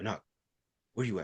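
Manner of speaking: gently spoken. Retelling a phone call from mom, imitating her talking softly. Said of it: "Like soft and shit".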